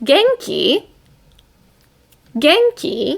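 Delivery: upward, question-like pitch lift at end of genki. Explaining Japanese questions, the speaker demonstrates rising question intonation. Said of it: "So your intonation goes up because you're asking a question".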